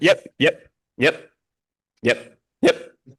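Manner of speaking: "yep" drawn out very slowly each time. Imitating LeBron cutting someone off with repeated yeps: LeBron James impression. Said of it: "LeBron just keeps going, "Yep."".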